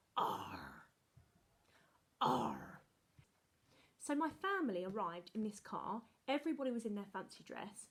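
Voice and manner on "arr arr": very low, swooping, growled pirate "arr". Asked to sound like a pirate, pirate voice 'arr'. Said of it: "Can you sound like a pirate?".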